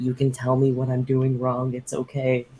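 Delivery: soft, hushed half-whisper with no voice. Speaking in character, reassuring another character quietly: half-whispering in character. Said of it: "I'm gonna whisper to him".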